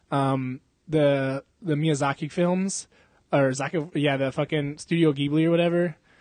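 plain

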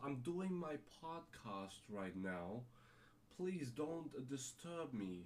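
slow, posh, snooty, stuck-up drawl. Mocking someone who sounds like a rich snob: mock snobby voice. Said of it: "You're sounding like a rich snob ... I cannot talk like that".

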